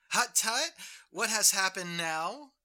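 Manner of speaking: put-on very loud, high Dutch grandmother accent. Retelling how the witch answered in his dutch step-grandmother's accent. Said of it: "the witch replied with his grandmother's accent".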